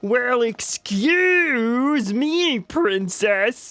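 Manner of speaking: slow froggy voice, pitched high. Replaying a remembered joke line in a voice like Kermit the Frog's stepbrother. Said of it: "It's like Kermit the Frog's stepbrother".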